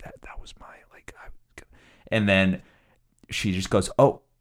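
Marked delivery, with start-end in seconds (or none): 0.0-1.6 put-on whisper, quieter. Retelling a remark heard at the end of the vows: imitating a whisper. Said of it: "you hear, like, a whisper".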